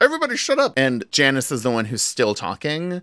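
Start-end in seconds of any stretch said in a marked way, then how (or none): 0.0-0.7 shrill, very high yell, pitched way up. Retelling how Kermit yells at the chattering group: imitating Kermit yelling.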